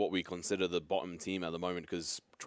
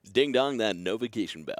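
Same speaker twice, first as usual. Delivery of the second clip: put-on american radio dj voice, higher and louder; 4 semitones higher, 7 dB louder than usual. Reminding viewers to hit the notification bell: American radio DJ voice. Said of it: "your American radio D J voice is getting good".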